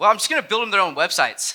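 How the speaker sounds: mock tone dripping with heavy sarcasm. Retelling how Brian answered his wife's question: imitating Brian being sarcastic. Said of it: "Sarcastically, he said".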